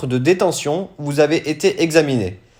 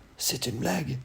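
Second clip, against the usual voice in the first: barely audible, very quiet half-whisper; 3 semitones lower, 14 dB quieter than usual. Narrator reading an aside from someone in a crowd, half-whispering. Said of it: "c'est en chuchotant".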